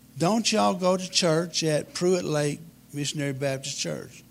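ordinary talk

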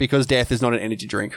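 ordinary delivery

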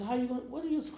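high, loud, incredulous retort.

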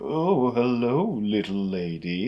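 very slow, drawn-out, romantic, flirty charmer voice. Describing the flower guy character: romantic flirty voice. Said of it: "the romantic kind of like".

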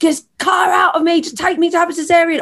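very high, frantic scream. Recalling her labor, quoting what she yelled at her midwife, retelling screaming at midwife. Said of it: "I was literally screaming at my midwife".

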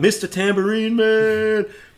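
very high, loud, sudden yelled outburst. Telling a story about a drive with the radio on, retelling a yell. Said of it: "Shatner yells out".

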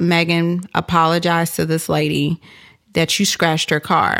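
ordinary talk

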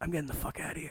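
secretive, breathy, very soft, far hushed whisper. Retelling what was said to a coworker at work: retelling a whisper. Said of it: "And I whisper to Lucas".

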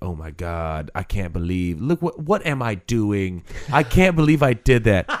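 aghast, stunned, disbelieving exclamation. Retelling a woman's reaction to seeing footage of herself: imitating someone in disbelief. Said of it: "she was in disbelief".

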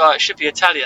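ordinary delivery

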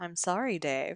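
quiet robotic computer voice. Brainstorming a sci-fi scene, doing the HAL 9000 voice. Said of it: "we totally have to get the HAL 9000 voice".

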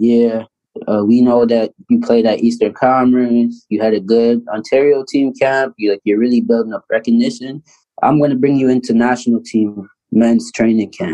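normal talking voice

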